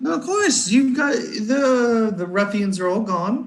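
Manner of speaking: high sing-song barmaid voice.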